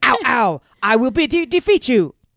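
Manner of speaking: very loud, slow, high kung fu dub voice. Describing how dubbed shows sound: dubbed kung fu movie voice. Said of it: "Picture a kung fu movie where it's like".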